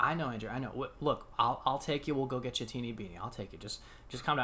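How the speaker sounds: calm, soft, patient, steady soothing voice. Andrew retells how the other man finally answered him, imitating someone speaking calmly. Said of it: "looked at me very calmly and was like".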